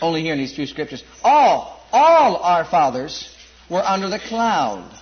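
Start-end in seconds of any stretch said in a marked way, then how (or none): 1.2-2.4 the word "all" stressed. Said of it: "emphasizing the word all".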